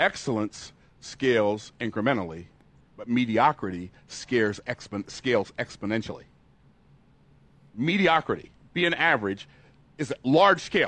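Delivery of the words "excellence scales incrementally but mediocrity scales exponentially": slow, deliberate, lowered voice, every word spaced. Repeating a key phrase to the audience a second time, saying it slower. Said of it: "I'm going to say it again slower".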